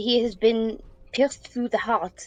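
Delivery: heavy put-on stage French accent on every word. Speaking as a character in the scene, use a french accent. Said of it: "That was hard to say in a French accent".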